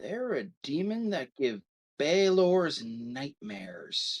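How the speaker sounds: hushed whisper. Telling of a guy who beckons you closer and whispers to you, whispering. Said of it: "he just whispers to you".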